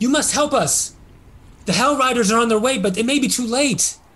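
high, very freaked-out, frightened, desperate urging. Voicing a priestess in a burning town greeting the rescuers: very freaked out. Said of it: "they're obviously very freaked out about the situation".

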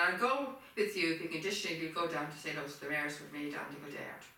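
ordinary talk, nothing marked

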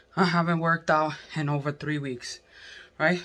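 winded, huffing, breathless, panting delivery. Working out on a lunch break, talking while out of breath. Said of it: "I'm so out of breath".

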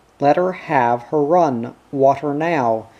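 ordinary delivery, nothing marked

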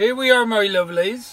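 accent from Cornwall. Speaking to companions in the camper, in a put-on Cornish accent. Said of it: "I don't know why I'm using this accent".

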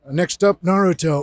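voice broken by coughs. Performing a referee character who announces the next fight in a sickly, coughing delivery. Coughing sickly voice. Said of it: "he's got the cough".

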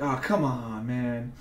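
mock very slow, drawn-out, stretched-out scream. Recalling watching a video with a group, retelling a scream. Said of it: "I'm just screaming".

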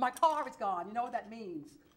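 ordinary delivery

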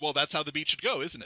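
plain

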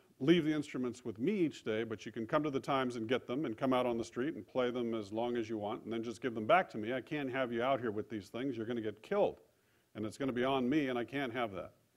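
ordinary talk

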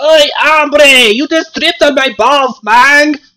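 angry, high-pitched fake Mexican accent. Game narrator voicing an angry man just tripped over, clearly fake Mexican accent. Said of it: "a very angry man with a clearly fake Mexican accent".

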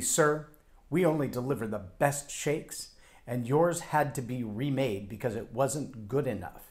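extremely haughty, talking-down, condescending put-on tone. Retelling a worker's reply about remade shakes: imitating a condescending tone. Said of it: "extremely condescendingly puts his hands on his hips".

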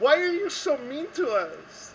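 put-on very high, drawn-out hollering with unplaceable accent. Imagining Lara showing up and yelling at the group: imitating Lara yelling in an odd accent. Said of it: "one day she'll be here and she'll yell".

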